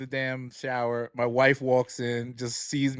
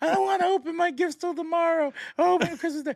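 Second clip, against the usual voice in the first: put-on very high, tearful child's wail, sobbing and whining. Retelling a family video, imitating the sister crying. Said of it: "My sister's crying".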